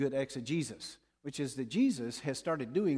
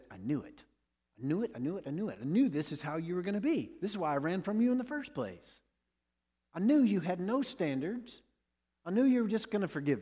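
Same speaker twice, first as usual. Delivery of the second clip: high-pitched, offended, indignant, exasperated ranting voice; 6 semitones higher than usual. Retelling a Bible passage, the speaker voices Jonah's words to God: Jonah's voice. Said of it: "use the voice of Jonah".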